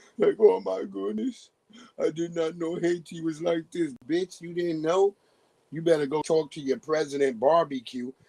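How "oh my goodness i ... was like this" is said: mock crying voice, higher pitched. Retelling a woman's reaction to seeing haiti: imitating someone crying. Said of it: "she was crying like shit".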